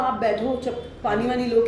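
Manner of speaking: ordinary talk, nothing marked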